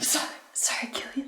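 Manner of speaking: mumbled under breath. Eduardo speaks to Killian after striking the bird, muttered under breath. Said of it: "Eduardo says under his breath".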